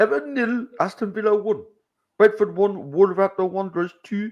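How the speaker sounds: attempted Geordie accent. Reading out football results, in a Geordie accent. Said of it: "Read the results in Geordie".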